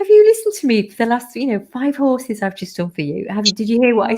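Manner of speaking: laughing, swooping voice. Speaker retelling what they said to her, while laughing. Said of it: "But I was saying it with like laughing".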